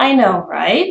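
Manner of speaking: pitch falls on know, rises on right. Teaching an American phrase, falling on 'know', rising on 'right'. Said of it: "the intonation is falling on the word no... And then it is rising on the word right".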